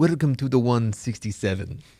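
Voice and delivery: put-on, made-up fake Russian accent. Podcast host jokingly opens an episode for the listeners' kids; fake russian accent. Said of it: "in fake Russian accents".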